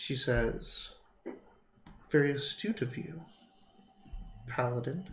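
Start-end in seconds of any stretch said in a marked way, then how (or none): 2.1-5.1 barely-there, very quiet, soft-spoken voice. Voicing a sorceress in charge who answers the paladin: very quiet voice. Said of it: "he's quieted by the quietest voice".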